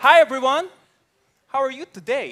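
put-on loud, heavy Filipino accent with broken English. Recalling when he first spoke broken English at school: strong accent. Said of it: "I had curtains".

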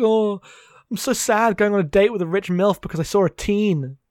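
scornful, mocking put-on character voice, heavily exaggerated. Mocking a film character's romantic troubles: Gene Kelly impression. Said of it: "That's my impression of Gene Kelly".

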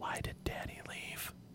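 faint, very quiet, soft feminine whispered voice. Voicing a soft feminine voice heard in a portal: soft feminine whisper. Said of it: "it's soft and feminine ... And it whispers".

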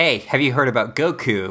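ordinary talk

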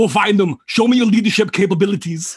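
very high-pitched, put-on Austrian accent. Retelling a story from the set, quoting Schwarzenegger in Schwarzenegger Austrian accent. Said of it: "I can't do the impression. Schwarzenegger says".

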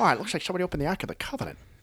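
very high cartoon-dad voice with swooping pitch. Recalling the bit he used to do, the speaker tries his Peter Griffin voice. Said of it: "I used to go".

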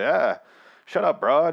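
put-on loud old-movie 1930s mobster voice. Mocking an actor's cliché heist dialogue, in a 1930s gangster voice. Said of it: "I'm talking like a 30s gangster".

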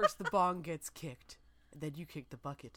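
retro horror movie-trailer narrator voice. Joking about a pot movie title, doing a 70s horror movie trailer voice. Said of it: "like the 70s and maybe early 80s, like, horror movie trailer voice".

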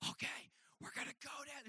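forceful, pushed, breathy, very hushed yell-whisper. Retelling sneaking downstairs as a kid: imitating a yell-whisper. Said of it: "yell whispering".

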